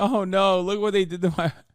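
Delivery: put-on words sobbed out through tears. Mocking a crying woman on the show: mock crying. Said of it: "She's like".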